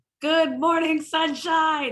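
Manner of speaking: aggressive, goofy, loud, high shout. Recalling the wake-up message the speaker shouted into the phone: retelling own morning shout. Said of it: "I would shout into the phone".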